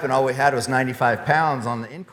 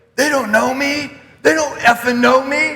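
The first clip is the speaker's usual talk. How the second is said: acted-out very high, defiant, raised running yell; 12 semitones higher, 6 dB louder than usual. Retelling what a fellow runner yelled while running alone: imitating someone yelling.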